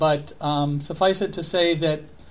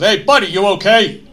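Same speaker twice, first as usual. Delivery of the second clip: put-on thick, heavy New York accent, very loud; 4 semitones higher, 10 dB louder than usual. Retelling the first firefighter checking on the speaker, in a heavy New York accent. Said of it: "in this heavy New York accent".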